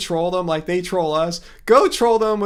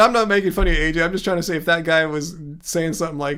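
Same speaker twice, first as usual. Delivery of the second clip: ordinary talk, nothing marked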